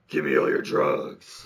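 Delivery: slow, drawn-out, rough, creaky disguise voice. Retelling a movie scene where a character disguises his voice: Batman voice. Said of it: "adopted the Batman voice".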